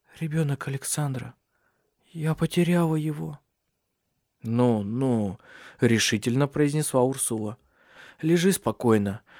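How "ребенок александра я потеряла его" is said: soft, faint, barely-there half-whisper. A narrator reads a woman waking beside her sister-in-law, half-whispering. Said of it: "прошептала Сесилия".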